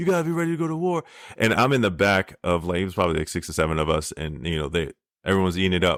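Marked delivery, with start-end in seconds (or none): 0.0-1.0 very high, fired-up, rallying yell. Retelling how the Gunny yelled to motivate recruits: imitating a recruiter yelling. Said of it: "he's yelling at, like".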